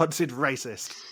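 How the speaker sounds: slipping into an Australian accent. Repeating a suggested video title, with an Australian-sounding accent. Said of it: "you actually sound Aussie".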